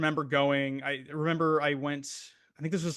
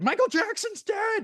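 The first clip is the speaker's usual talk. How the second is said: mock very high, shrill yelling. Retelling a phone call from mom at a ball game: imitating mom yelling. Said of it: "She just yells into my ear".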